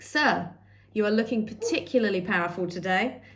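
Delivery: ordinary delivery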